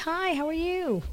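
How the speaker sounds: very high, slow put-on friendly service voice. Recalling greeting a woman who came in, while working with the public: imitating own friendly voice. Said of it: "that's my friendly voice".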